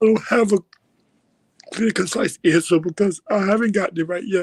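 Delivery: speaking through tears, crying. Answering a question in a conversation, crying while talking. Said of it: "because you're crying".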